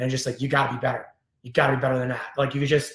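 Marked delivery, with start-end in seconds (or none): 0.4-2.3 acted-out, angry, scolding tone. Retelling what a player's mother said to him off the ice, imitating her angry tone. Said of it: "she just like says in that angry tone".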